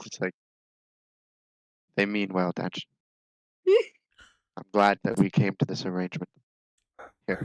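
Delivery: close, private, confidential tone. Undoing his bindings, a character speaks to him in Undercommon, speaking quietly. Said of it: "speak quietly to him in Undercommon".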